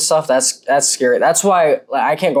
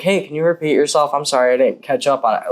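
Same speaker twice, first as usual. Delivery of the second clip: mock-polite, asking-nicely tone. Recounting asking a man who talked fast to repeat himself, retelling a polite request. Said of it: "Like nicely".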